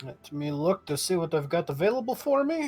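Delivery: hushed, put-on, vampire-like Russian accent. Taking a turn in a game, a player speaks in a russian accent. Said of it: "all of a sudden you're talking like a vampire".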